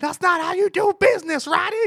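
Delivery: shrill, very high, very loud screaming. Retelling someone squirming on the floor: imitating someone yelling. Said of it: "floor yelling".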